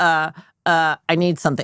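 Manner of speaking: put-on stuttering, stammering delivery. Retelling how a caller stammered before asking a favor: imitating a friend stuttering. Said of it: "start stuttering at the beginning of the call".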